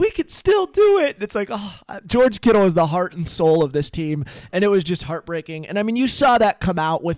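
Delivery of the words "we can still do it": put-on hopeful voice, higher in pitch. Retelling a player asking the injured quarterback a question: imitating hopeful George Kittle. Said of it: "just so hopeful".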